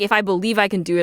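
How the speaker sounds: ordinary delivery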